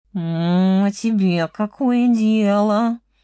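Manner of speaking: very slow, drawn-out grumbling voice. A cat answers a fox in the forest without stopping, grumbling. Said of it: "проворчал кот".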